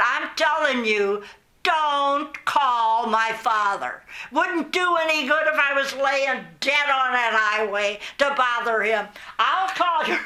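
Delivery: mock yelling, shouted. Retelling a teacher's angry reply in the hallway: imitating someone yelling. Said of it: "they're yelling like that".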